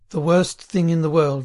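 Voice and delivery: ordinary delivery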